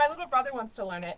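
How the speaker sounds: excited, rapid rush of words. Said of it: "I'm speaking very quickly".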